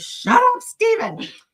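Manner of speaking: acted, shrill, very high-pitched screaming. Retelling a woman screaming at him in front of the judge; imitating her screaming. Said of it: "she's screaming".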